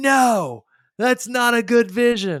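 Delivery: very high, loud, hyped-up coach voice.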